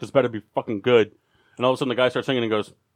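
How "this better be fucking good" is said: ordinary talk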